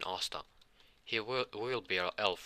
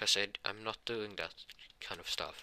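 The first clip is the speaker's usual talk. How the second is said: ordinary delivery, nothing marked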